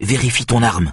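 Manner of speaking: taut, tense, strained delivery. Narrator reads Mira speaking to Steve, in a tense voice. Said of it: "d'une voix tendue".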